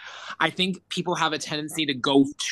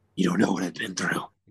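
very low, grumpy, grumbling put-on voice; 8 semitones lower than usual. Comparing themself to Batman in conversation, mock-grumpy Batman impression. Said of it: "That's a good impression".

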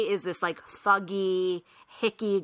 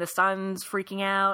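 plain

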